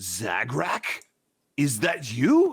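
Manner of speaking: very slow, swooping, put-on recognition. Playing a character faking recognition of a stranger: faking recognition. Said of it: "trying to fake him out that I recognize him".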